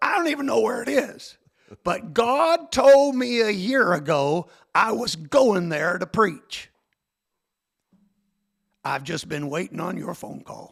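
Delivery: put-on gruff voice. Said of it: "he had that r-, gruff voice".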